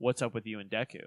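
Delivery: put-on calm anime-character voice. Recapping a scene, the speaker quotes Bakugo talking to another character: imitating Bakugo's calm voice. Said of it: "in the most calm I've ever heard him".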